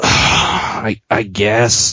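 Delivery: put-on heavy sigh. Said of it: "I got the perfect you impersonation".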